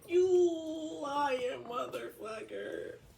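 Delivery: very high, loud laugh-crying wail, laughing turning into crying. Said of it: "got me up here crying".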